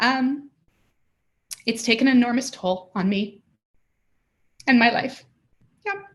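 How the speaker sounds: voice welling with emotion. Answering a hard question about caring for their mom, getting emotional. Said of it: "I didn't expect to get emotional".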